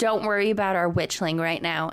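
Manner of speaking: ordinary talk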